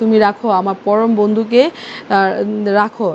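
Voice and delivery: plain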